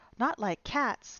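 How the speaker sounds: loud, shrill, impassioned, passionate cry. Reading a story aloud, voicing the mouse's outcry, shrill, passionate voice. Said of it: "in a shrill, passionate voice".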